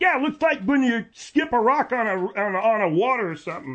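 shouting. Host describing the show's new fade effects to viewers, shouting. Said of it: "Why do you yell everything?".

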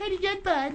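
high, mocking imitated voice. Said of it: "two can play at that game".

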